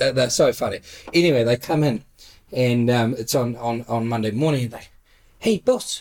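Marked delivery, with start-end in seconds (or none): 5.4-6.0 put-on broken English voice, much higher. Retelling the workers arriving monday morning and greeting the boss, impersonating the workers. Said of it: "That's my best impersonation".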